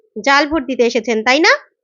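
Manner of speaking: normal talking voice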